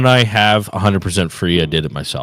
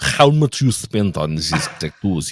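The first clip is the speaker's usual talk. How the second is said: fake, put-on Russian accent. Reading a tattoo question aloud for fun: put-on russian accent. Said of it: "I can do Russian".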